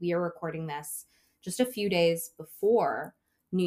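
ordinary delivery

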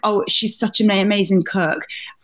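plain

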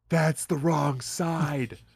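put-on whisper. Retelling a line from a game, whispering as Homer. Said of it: "he'll just whisper to you".

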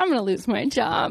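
put-on sighing man voice. Joking about Gary's reaction to reading ads, imitating Gary's mock sigh. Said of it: "Gary is just like sighing".

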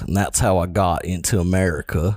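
fake, put-on American cowboy accent. Speaker explains how they got into America in a ten-gallon hat, put-on American cowboy accent. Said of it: "I made my voice kind of like this".

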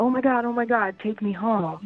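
imitated excited speech. Retelling what a date said after winning a scratch lottery, imitating an excited date. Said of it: "so excited".

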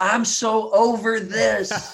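high, very slow, drawn-out shout. A parent retelling how their six-year-old yelled during an online test: retelling a child's yell. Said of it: "she just looks at my wife and she yells".

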